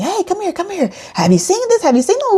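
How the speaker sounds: play-acted very high, fast, swooping yell. A wife retells her husband calling her over to the tv, imitating his yelling. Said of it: "he was yelling at me".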